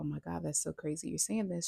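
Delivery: ordinary talk, nothing marked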